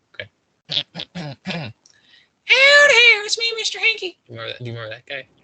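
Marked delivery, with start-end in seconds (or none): 0.7-4.2 very high, loud, drawn-out, swooping cartoon voice. After warning that it may be bad, show your high-pitched Mr. Hankey voice. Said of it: "he's like the high-pitched voice. I could kinda do his voice".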